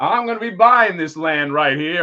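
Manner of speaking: loud, booming eighties movie villain voice. Acting out an eighties movie scene as the Rite Aid developer: Michael Rite Aid, eighties movie villain. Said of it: "he's like Michael Rite Aid".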